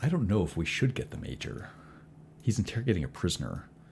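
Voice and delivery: hushed, low-volume voice. Narrator voicing guards discussing among themselves while gazing at the roof, hushed voice. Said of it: "They're discussing amongst themselves in a hushed voice".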